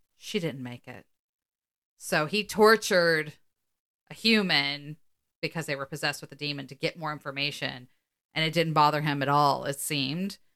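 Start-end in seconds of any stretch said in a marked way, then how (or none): 0.2-1.1 cold line, lower and quieter. Speaker retells Gordon's answer to Dean about the possessed girl, retelling Gordon's cold reply. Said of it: "gordon just very coldly goes".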